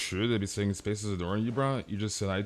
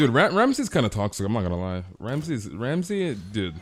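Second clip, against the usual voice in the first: ordinary talk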